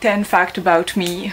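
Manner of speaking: slow, put-on, very English accent. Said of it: "avec mon super accent anglais".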